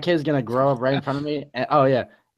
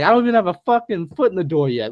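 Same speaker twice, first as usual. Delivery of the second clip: angry yell, higher and louder; 5 semitones higher, 5 dB louder than usual. Imitating a dad annoyed that kids greet him at the door: imitating dad yelling. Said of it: "my dad be like".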